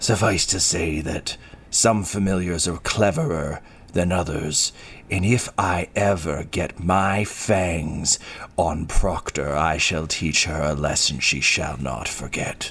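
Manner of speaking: snarling character voice. Narrating the game, the storyteller voices Proctor answering a question, snarling. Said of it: "Proctor just snarls and says".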